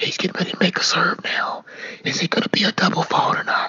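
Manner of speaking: soft, breathy, hushed whisper. Showing how people speak while a player prepares to serve: imitating a whisper. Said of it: "So you have to whisper".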